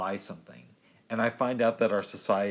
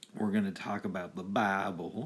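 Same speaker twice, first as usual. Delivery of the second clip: exaggerated, put-on Southern American accent. Laying out the evening's plan to someone, in a weird Southern accent. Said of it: "That's me doing like a weird Southern accent".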